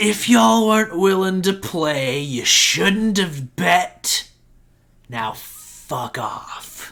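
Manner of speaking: put-on loud drunk voice, dragged out very slowly. Voicing a tiefling with a bottle telling elves off: drunk tiefling voice. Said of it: "he kinda drunkenly stumbles back in".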